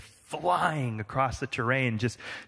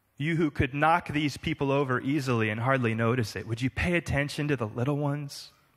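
ordinary talk, nothing marked

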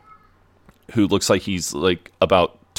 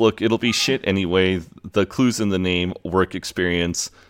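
normal talking voice

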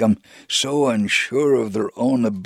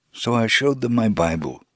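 ordinary talk, nothing marked

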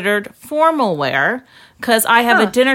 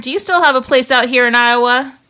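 put-on Texas accent. Reading out a tweet sent to William Shatner, in a put-on Texas accent. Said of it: "I just threw in my Texas accent".

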